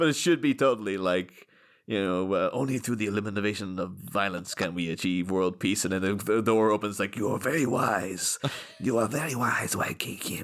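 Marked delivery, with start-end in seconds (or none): 7.2-10.4 put-on French-accented voice. As the French Raiden coming in when the door opens, do your best French Christopher Lambert impression. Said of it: "I'm trying to do my best Christopher Lambert".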